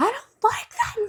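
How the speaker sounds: acted, very high, tearful bawling child's voice. Retelling Ada hearing her middle name is James, imitating Ada bawling. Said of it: "she started like bawling and screaming like".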